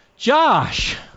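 high, carrying call.

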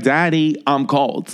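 imitated three-year-old girl voice. Father quotes his daughter during a car ride, imitating his three-year-old daughter. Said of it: "daughter's the same voice, just a little like".

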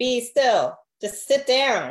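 slow, insistent, high, drawn-out acted yell. Retelling how a calling feels, imitating someone screaming at the speaker. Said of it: "sometimes he is screaming at me".

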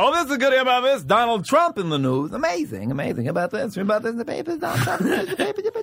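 very high-pitched, each phrase trailing off. Showing how a talk show host trails off a joke: Jay Leno voice. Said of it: "he'll try to be like".

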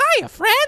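very high, loud cartoon mouse voice. Asked whether they can do a Mickey voice, answering in a Mickey voice. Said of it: "Can you do a Mickey voice?".

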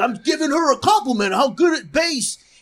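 insistent, high-pitched hollering yell. Co-hosts recalling a guy from a shared story: retelling a yell. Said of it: "he starts yelling".

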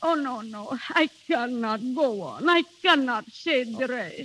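breaking down, crying and tearful. A woman recounting her journey back home breaks off her story, crying. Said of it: "Don't cry".

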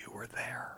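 tiny, small, whispered little voice. Recalling a phone call, quoting the woman on the line in a little quiet voice. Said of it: "this little quiet voice".

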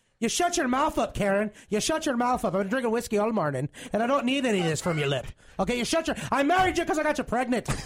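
put-on traditional old-country Irish brogue. Doing a bit addressed to karen in a traditional irish accent. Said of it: "my traditional Irish".

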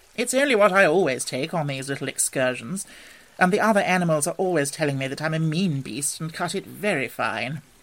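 ordinary delivery

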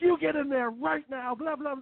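very high-pitched screaming. A cop outside hears you forcing the dog into the bathtub; retelling someone screaming. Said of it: "all he hears is like you screaming".

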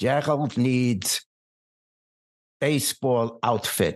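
put-on heavy, thick German accent. Retelling what Mom said at a department store, in a thick German accent. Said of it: "she says in her thick German accent".

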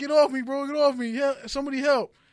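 put-on high, loud, frightened child voice, pleading. Retelling a fight on a bus, imitating a scared kid. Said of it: "the kid was scared, I could tell".

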